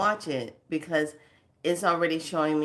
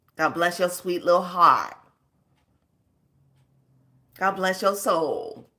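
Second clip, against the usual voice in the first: raised, sugary, sweetly dripping sarcastic tone; 3 semitones higher, 5 dB louder than usual. Addressing YouTube about its algorithms, sarcastic. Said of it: "Notice how sarcastic I'm being right now".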